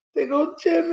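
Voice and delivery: loud, wild put-on scream. Retelling own reaction when jimmy came back: retelling own screaming. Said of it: "I was screaming throughout my house".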